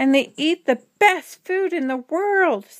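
high, eager storybook exclamation, read aloud. Stellaluna speaks to the birds on the way; exclaimed. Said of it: "Stellaluna exclaimed".

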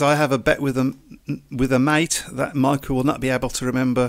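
normal talking voice

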